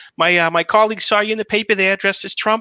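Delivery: put-on Boston accent. Speaker quotes his mom telling him about the newspaper, imitating her wicked boston accent. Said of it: "she's got a wicked Boston accent".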